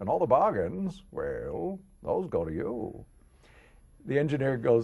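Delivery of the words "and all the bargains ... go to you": put-on old New England man voice, higher pitched. Retelling a first commercial read in an old Pepperidge Farm guy voice. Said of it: "like, the old Pepperidge Farms guy from New England".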